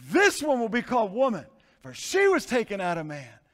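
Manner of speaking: impassioned, passionate reading with swooping pitch. Showing how the passage should be read with proper passion: passionate reading. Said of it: "I think it should be read probably in this way".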